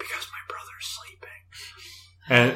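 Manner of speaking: slow, unvoiced whisper.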